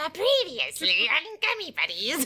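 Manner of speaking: high grumbling put-on voice. Opening tonight's episode with a recap, in a Crypt Keeper voice. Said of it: "Like a grumbling voice".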